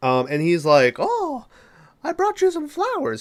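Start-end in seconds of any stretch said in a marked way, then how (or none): 1.0-3.2 very high put-on silly clown voice. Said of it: "He doesn't talk like that in the mo-, he talks with a normal voice".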